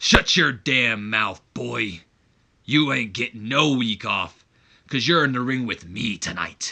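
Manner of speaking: tough-guy wrestler's trash-talk promo delivery. Voicing a wrestler's promo reply, sounding like Wolverine. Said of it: "I don't know why he sounds like Wolverine".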